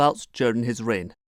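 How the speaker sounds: ordinary talk, nothing marked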